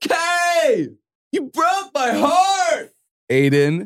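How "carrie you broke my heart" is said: put-on man screaming, pitched higher. Retelling a scene where Aiden screams on a New York street: imitating Aiden screaming. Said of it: "He just screamed at her in the".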